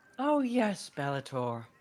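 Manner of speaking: woman's voice used for a fairy character. Voicing a character who introduces a fairy, in a woman's voice. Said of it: "why do you have such a good woman's voice".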